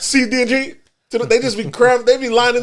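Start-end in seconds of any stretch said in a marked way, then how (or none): 0.0-0.7 mock rushed announcement, fast, higher pitch. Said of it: "they start saying it faster".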